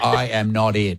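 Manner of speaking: plain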